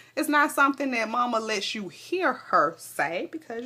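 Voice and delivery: ordinary talk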